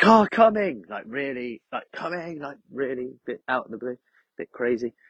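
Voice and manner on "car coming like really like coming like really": put-on very high, loud, aggressive yell. Retelling shouting a warning on the next side: loud, mock-aggressive shout. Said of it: "I think I shouted it a bit more loudly and aggressively".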